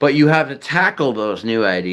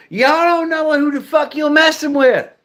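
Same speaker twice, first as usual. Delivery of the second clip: put-on, very high-pitched Southern accent. Imitating someone talking tough, in a Southern accent. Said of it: "people with the Southern accent".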